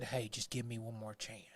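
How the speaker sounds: very quiet, low, hushed voice, almost under the breath. Imagining McCarthy asking to stay on for one more chance: Jerry voice. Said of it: "I just did that in Jerry voice".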